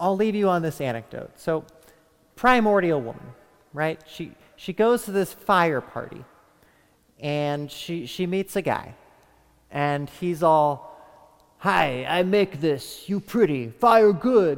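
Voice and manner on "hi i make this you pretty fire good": put-on, loosely Eastern European, vague accent. Telling an anecdote about a primordial man meeting a woman at a fire party; vaguely Eastern European accent. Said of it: "he sounded so vaguely Eastern European".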